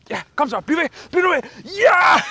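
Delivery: very high, climbing, swooping encouraging cheering yells. Speaker retells shouting upstairs while someone watched downstairs: retelling a cheering shout. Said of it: "Så jeg kommer til at råbe".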